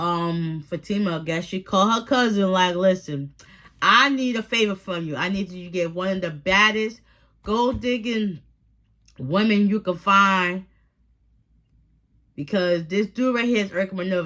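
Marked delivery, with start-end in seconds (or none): none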